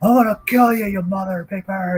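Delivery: light, high shriek. Retelling a man's threat near the mailbox area, retelling someone screaming. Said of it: "And he's like screaming at me".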